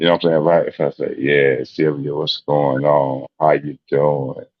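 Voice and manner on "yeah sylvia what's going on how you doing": deliberately slowed, stretched, drawn-out speech. Showing a greeting to Sylvia done slowly: deliberately slowed-down voice. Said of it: "That's me slowing my voice down".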